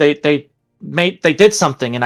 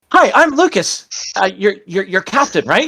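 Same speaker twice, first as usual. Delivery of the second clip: put-on overexcited, hyperactive puppy voice; 4 semitones higher than usual. Retelling meeting Lucas: imitating Lucas as a hyperactive puppy. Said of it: "the voice in your head of a hyperactive puppy".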